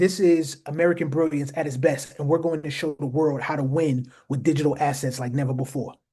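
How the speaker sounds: usual speaking voice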